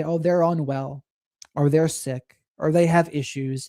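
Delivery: normal talking voice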